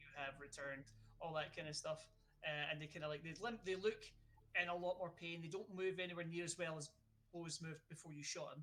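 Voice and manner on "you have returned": robotic voice, lower and quieter. Retelling a game, speaker voices characters greeting someone in a robotic voice. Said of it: "in robotic voices".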